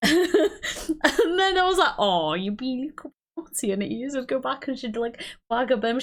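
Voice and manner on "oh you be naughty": put-on thick, sing-song Welsh accent. Retelling talking to mum's dog, in a put-on really Welsh accent. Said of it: "I'd put on like a really Welsh accent".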